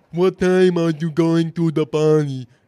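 mocking, put-on deaf-speech voice. Retelling a movie scene, imitating Becky's mocking deaf voice. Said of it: "this is me doing an impression of Becky".

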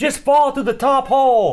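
play-acted, high-pitched screaming yell. Telling a player about watching their playthrough, retelling screaming at the TV. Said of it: "I was screaming at the TV".

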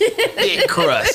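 very high mock squeal.

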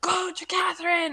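very high, loud, scared scream. Retelling calling the dog over: retelling own screaming. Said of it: "and we're screaming".

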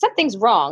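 ordinary delivery

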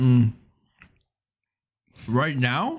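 speaking while chewing, mouth full. Responding to another speaker with candy in mouth: talking with mouth full. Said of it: "I have a fruit by the foot in my mouth".

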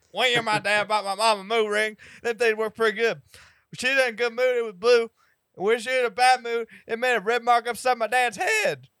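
shrill, booming, garbled, very high, loud comic voice. Telling a joke as a punishment in a Larry the Cable Guy impression. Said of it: "I'm trying to do my impression".

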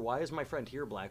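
usual speaking voice

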